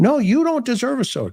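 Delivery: play-acted, high-pitched shouting. Retelling an argument with a man, imitating someone yelling. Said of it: "he's yelling at me".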